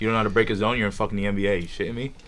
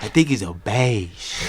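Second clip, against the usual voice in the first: comic character voice. Repeating the line on request: sounding like Nacho Libre. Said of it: "you said it like Nacho Libre".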